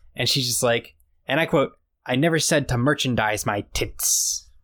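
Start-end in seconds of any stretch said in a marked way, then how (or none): 2.1-4.4 acted, slow, aggressive, combative, hard t in tits. Retelling a comic scene, quoting the heroine's reply: imitating an aggressive retort. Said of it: "But she says it aggressively".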